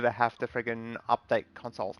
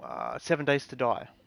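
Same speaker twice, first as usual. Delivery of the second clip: plain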